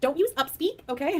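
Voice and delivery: snooty teacher voice. Quoting an English teacher who called out upspeak, imitating a snotty teacher. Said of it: "She was so snotty".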